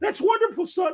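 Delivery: play-acted weepy, very high, tearful sob-talk. Retelling a Man of Steel scene where the mom answers Clark, imitating Diane Lane crying. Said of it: "why the fuck are you crying?".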